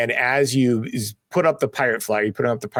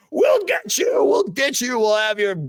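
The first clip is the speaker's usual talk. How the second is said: very high, squeaky, swooping, menacing voice; 11 semitones higher than usual. Voicing the shot fat man as he threatens the players: fat man threatening the party. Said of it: "And he's like".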